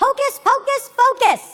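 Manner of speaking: high, slow, drawn-out yell. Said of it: "you yell out".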